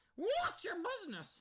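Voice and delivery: very high, loud cartoon duck-like voice. Mimicking a lady's question: Donald Duck voice. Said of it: "like Donald Duck?".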